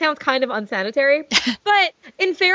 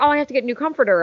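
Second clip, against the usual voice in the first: ordinary talk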